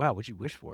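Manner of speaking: ordinary delivery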